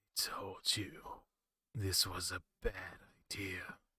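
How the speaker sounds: voice full of distortion and hiss. Narrator reads a voice answering on a rotary telephone, distorted and hissing. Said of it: "A voice drenched in distortion and hiss said".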